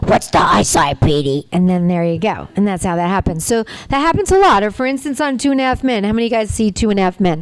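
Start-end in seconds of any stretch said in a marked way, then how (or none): 0.0-1.5 put-on very low, croaky, froggy little-boy voice. Voice actor showing how he redid a little boy's line, froggy Petey voice. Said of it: "Which isn't froggy enough. So they bring me in and I redo his voice".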